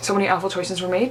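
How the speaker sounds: ordinary talk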